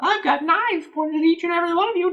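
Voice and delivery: put-on old woman voice. Retelling what an old lady threatened, in an old lady impression. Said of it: "that's my old lady impression".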